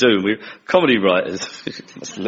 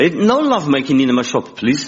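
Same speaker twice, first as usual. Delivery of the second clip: put-on Greek accent; 4 semitones higher than usual. Quoting the kebab shop owner to people mucking about in his shop: Greek accent impersonation. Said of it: "he did an impersonation of a Greek mate of his".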